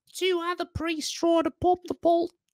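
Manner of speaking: put-on Australian accent pitched way up high. Reading one sentence aloud in an australian accent: put-on australian accent. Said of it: "if you read it in an Australian accent".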